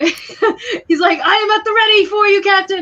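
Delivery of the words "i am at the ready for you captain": very high-pitched, loud hollered shout. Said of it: "shouting this".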